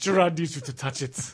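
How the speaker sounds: put-on, attempted French accent. Playing Gerard urging someone to touch the robot: Gerard in a bad French accent. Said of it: "I don't know how to do a French accent".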